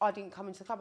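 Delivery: ordinary talk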